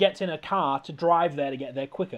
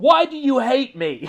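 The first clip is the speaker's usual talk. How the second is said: loud, slow scream. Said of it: "she screams at her mum".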